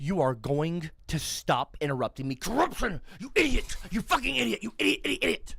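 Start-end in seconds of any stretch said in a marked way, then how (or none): 2.3-5.5 raspy, high-pitched, raging rant. Answering a taunt to release an ape rampage: put-on raging rampage. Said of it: "Go fully release on me like a damn monkey".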